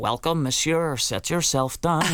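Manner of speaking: put-on full, strong Belfast accent. Recalling the role the director let you play, as Thénardier in Belfast accent. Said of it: "it was a full Belfast".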